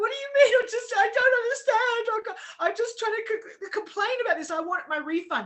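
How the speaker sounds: loud, high-pitched bawling. Retelling a refund phone call, retelling own bawling. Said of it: "And I was like bawling".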